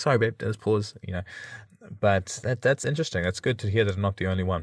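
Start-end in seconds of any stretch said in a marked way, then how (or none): none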